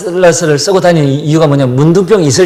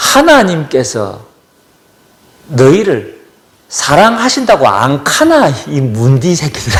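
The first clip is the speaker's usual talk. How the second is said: plain, direct Gyeongsang dialect speech. Retelling what a pastor said when entering a lecture: imitating a Gyeongsang dialect. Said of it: "경상도 사투리로".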